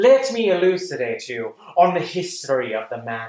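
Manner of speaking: warm, erudite, welcoming professorial lecturing voice. Showing how he actually spoke: Vincent Price voice. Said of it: "my Vincent Price voice is... very erudite... very warm, very inviting professorial feel".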